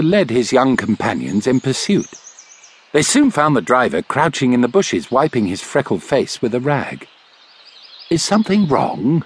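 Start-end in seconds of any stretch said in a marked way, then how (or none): 8.1-9.2 kind, gentle, lightly raised pitch. The doctor crouches beside the driver in the bushes and asks him: gently. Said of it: "asked the doctor gently".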